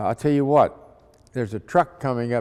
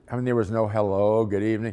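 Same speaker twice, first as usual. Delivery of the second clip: usual speaking voice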